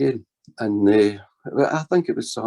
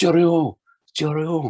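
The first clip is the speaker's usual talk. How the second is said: put-on, very slow, high, stretched-out calling voice; 6 semitones higher than usual. Retelling how a small man in the street called out: imitating someone shouting. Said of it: "and he's shouting".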